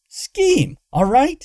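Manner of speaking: very high, sharp, snappy tone. Corrected mid-question by a companion, a girl snaps back. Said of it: "Luna snapped".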